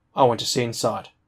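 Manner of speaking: ordinary delivery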